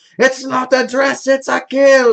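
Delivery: mock very high, drawn-out shrieking scream. Recalling his buddy recording a line in their garage, retelling a scream. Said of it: "he would be screaming into this little microphone".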